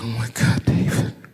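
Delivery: imitated mock crying. Retelling what she said to david while crying, imitating someone crying. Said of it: "And she's crying".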